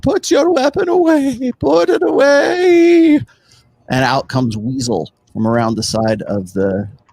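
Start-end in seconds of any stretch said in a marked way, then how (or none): 0.0-3.2 put-on slow, frail, very high elderly voice, words stretched out. Narrating a scene to players, voicing Weasel in a very old, frail voice. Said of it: "You hear a very old, frail voice go".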